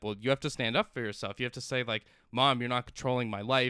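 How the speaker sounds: plain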